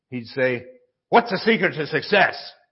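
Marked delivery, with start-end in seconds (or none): 1.0-2.3 put-on, rough, gruff voice. Retelling how a man quizzed a kid on the secret to success, gruff voice. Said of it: "just a gruff voice".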